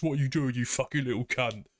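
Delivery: put-on, aggressive British chav teenager voice. Describing a game bug that flies at you when aggroed: imitating a shouting British chav. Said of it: "sounds like a teenager, British chav".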